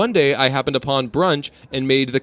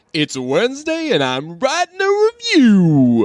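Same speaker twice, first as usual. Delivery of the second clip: very high character voice, pitch swinging up and down; 10 semitones higher, 4 dB louder than usual. Reading out a listener review like the Mayor from The Nightmare Before Christmas. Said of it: "I said that like the, uh, the mayor in".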